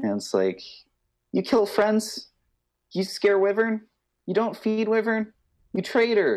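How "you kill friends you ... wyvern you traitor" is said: very high, furious, enraged little creature voice. Voicing a kobold that confronts a player character: angry kobold voice. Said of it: "it's getting very angry".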